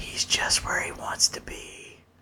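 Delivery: whisper. Recalling a remark once whispered to another person, retelling a whisper. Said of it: "I did look over at Matt and I whispered".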